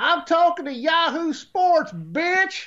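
high, brash lady voice.

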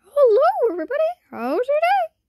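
squeaky, very high, sing-song cartoon voice. Sharing things about themself, showing they can talk in a Mickey Mouse voice. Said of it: "I could talk like Mickey Mouse".

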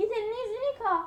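high-pitched, loud, bossy yelling.

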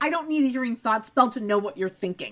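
ordinary talk

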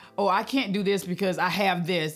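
plain

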